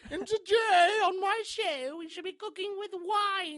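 wine pitched high and stretched out. Responding to a co-host's slipping accent; Julia Child impression. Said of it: "You almost sound like Julia Child".

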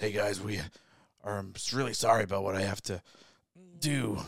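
strained, chest-pressed voice. Showing a co-host how to do Leonard's voice, as if something presses on the chest. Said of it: "like something's pressing on your chest".

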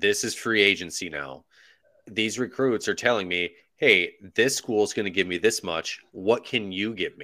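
ordinary talk

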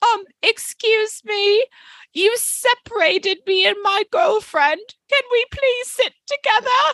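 meek British voice. Retelling what a man sitting next to the speaker on a train said, imitating a meek british man. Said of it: "this very meek little british man next to me goes".

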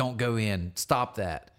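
put-on angry muttering.

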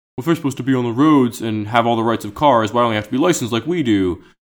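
mocking, put-on big dumb idiot voice. Imitating motorists who ask why cyclists aren't licensed: mocking big dumb idiot voice. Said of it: "Why does the motor sound like a big dumb idiot?".

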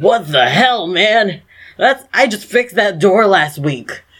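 startled, surprised character voice. Voicing a surprised half-orc tavern owner whose door was broken: half-orc tavern owner voice. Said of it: "the tavern owner is a half orc".

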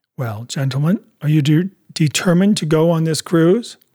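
ordinary delivery

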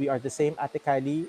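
plain

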